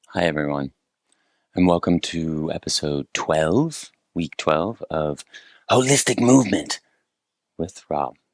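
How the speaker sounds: slow, very sultry, smoky smoker's voice. The host welcomes everyone to episode twelve: very sultry voice. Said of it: "my voice is sounding very sultry".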